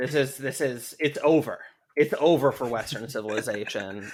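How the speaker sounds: plain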